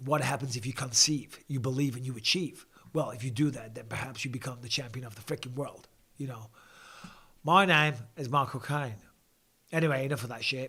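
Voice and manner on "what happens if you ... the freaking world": softer, attempted American accent. Speaker runs through impressions, attempting an American accent. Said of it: "I can't sound American at all. But listen to me".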